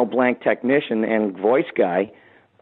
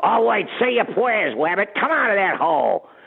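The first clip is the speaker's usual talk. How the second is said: high-pitched, unhinged, psycho cartoon character voice; 9 semitones higher than usual. Describing the character turning into Psycho Man: Elmer Fudd as psycho man. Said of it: "turning into Psycho Man".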